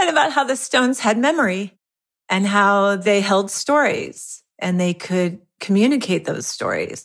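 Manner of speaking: tearful, choking up, voice breaking, close to tears. Remembering a teacher talking to a young son about stones: choking up with tears. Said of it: "I'm gonna start crying".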